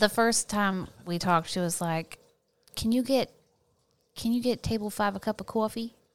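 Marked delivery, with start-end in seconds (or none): 2.7-5.9 put-on New Jersey accent. Quoting what a woman first said to her, jersey accent. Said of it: "Can you do a Jersey accent?".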